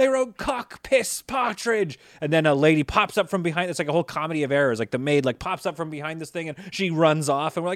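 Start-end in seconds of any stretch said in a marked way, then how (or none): 0.0-2.0 very high, shrill, drawn-out, outraged furious scream. Retelling a scene where their character screams, retelling a mad scream. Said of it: "my character was like so mad".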